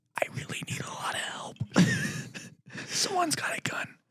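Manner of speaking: soft, quick, unvoiced panicked whisper. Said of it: "everything was whispered".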